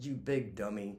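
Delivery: put-on quiet mumble under the breath. Retelling what a woman at a laptop said: imitating someone mumbling under breath. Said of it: "she's kinda mumbling under her breath".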